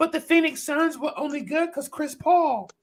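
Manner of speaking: mocking voice, pitched very high. Mocking a narrative people pushed about the Phoenix Suns, in a mocking voice. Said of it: "this is my mocking voice".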